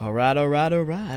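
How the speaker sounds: woeful put-on American accent. Speaker says alright three times in a woeful american accent. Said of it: "That was my woeful American accent".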